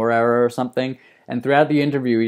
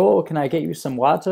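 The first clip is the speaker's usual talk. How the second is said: put-on European-sounding German accent, pitched higher; 5 semitones higher than usual. Imitating a woman offering water in a German TV interview, her German accent. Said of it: "I'm not sure I can do her German accent".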